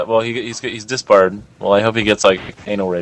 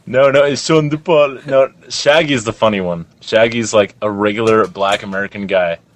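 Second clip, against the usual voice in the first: plain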